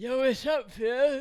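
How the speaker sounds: put-on drunken speech. Retelling how a drunk friend greeted the speaker: imitating a drunk friend. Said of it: "he's all drunk".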